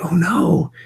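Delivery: soft, high, hushed whisper. Retelling the reply to a student's secret: imitating own whisper. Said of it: "kind of whispering back like".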